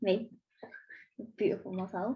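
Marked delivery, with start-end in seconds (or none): 1.4-2.2 soft, sarcastic tone. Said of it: "I'm being sarcastic".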